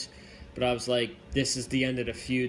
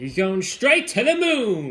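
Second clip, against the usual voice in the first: loud, belted, swooping put-on voice, "moon" stretched out; 8 semitones higher, 10 dB louder than usual. Previewing Dexter Loomis versus Cameron Grimes in a Cameron Grimes impersonation. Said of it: "That's my Cameron Grimes impersonation".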